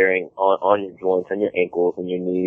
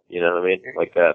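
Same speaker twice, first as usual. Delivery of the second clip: usual speaking voice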